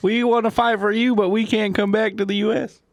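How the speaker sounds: very high-pitched, put-on Southern US accent. Voicing Canadian friends who want to fight: southern accent. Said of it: "I gave them a southern accent".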